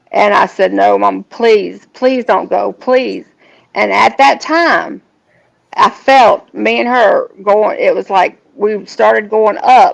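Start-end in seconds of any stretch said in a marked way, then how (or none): 0.7-3.2 urgent, desperate, imploring begging tone. Retelling begging Mama to stay: reenacting begging. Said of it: "I was begging her to stay".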